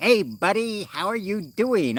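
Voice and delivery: put-on phony English accent, pitched very high. Retelling a Moroccan guy he passed, speaker mimics his fake English accent. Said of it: "trying to fake like a, a an English accent".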